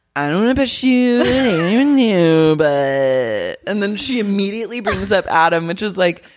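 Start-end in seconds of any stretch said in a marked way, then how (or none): 0.2-3.6 put-on drunken, slurred speech. Retelling what a wasted Kristen said: imitating Kristen slurring. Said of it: "she's slurring".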